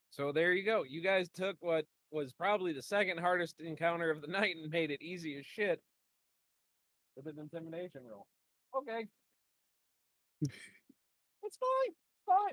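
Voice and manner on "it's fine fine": very high, animated, swooping up-and-down voice. Game master after players breeze through a hard encounter with one roll: voice getting all high. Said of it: "why my voice is getting all high".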